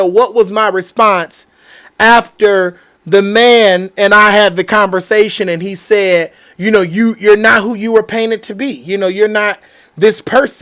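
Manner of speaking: ordinary delivery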